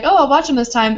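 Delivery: normal talking voice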